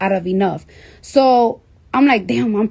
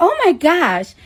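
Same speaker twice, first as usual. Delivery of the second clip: put-on Staten Island girl accent, higher; 7 semitones higher than usual.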